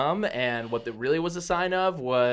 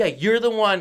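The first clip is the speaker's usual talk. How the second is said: put-on, raised, high-pitched yelling; 8 semitones higher, 6 dB louder than usual. Retelling how the british guy yelled at someone else: imitating someone yelling. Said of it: "yelling at someone else".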